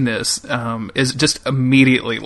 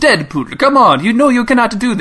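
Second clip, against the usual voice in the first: put-on old Russian accent, higher; 10 semitones higher, 4 dB louder than usual. Imitating a movie character scolding Deadpool: old Russian-accented Colossus voice. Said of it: "old and Russian".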